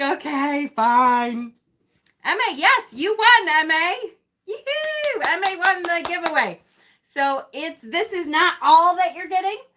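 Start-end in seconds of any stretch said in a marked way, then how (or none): 0.0-1.5 put-on sarcastic tone. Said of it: "the patience lessons come out of sarcasm".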